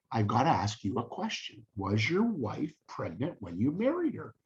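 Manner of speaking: very quiet, hushed, soft voice. Retelling a story, the speaker quotes his father questioning a young man: retelling very quiet speech. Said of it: "very quietly".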